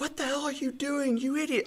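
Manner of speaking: shrill screaming, pitched way up, high-pitched. Describing the coach one is not, who screams at players: mock screaming at a player. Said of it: "I'm not screaming at them like".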